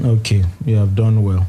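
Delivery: ordinary delivery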